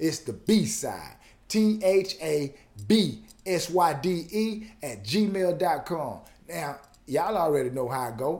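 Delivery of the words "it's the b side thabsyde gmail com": very slow, careful, deliberate, spelled out word by word. Repeating an email address to the audience, slowed down. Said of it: "I'm going to slow it down again".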